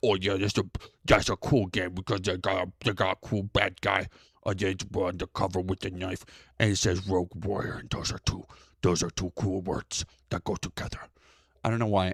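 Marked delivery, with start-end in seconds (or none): 0.0-11.0 low, dim, dopey, gushing puppet monster voice. Mocking how another person would praise a game: Cookie Monster voice. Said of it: "I went Cookie Monster with Andy Pants".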